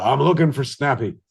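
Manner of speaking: put-on stage Irish accent, laid on thick. Speaker retelling running on stage as a dog catcher, in an Irish accent. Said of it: "I start spa- talking in an Irish accent".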